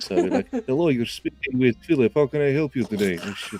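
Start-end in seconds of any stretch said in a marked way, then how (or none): 0.7-3.2 put-on Russian accent, high-pitched and loud. Answering a work phone call in a put-on russian accent. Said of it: "I come from Russia".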